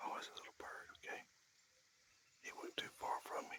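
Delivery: hushed whisper. Noticing something moving right nearby, speaking in a whisper. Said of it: "I'm whispering".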